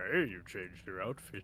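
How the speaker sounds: low, deep cartoon character voice. Voicing the rich boy noticing a changed outfit: Homer Simpson voice. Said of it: "I made him sound like Homer Simpson".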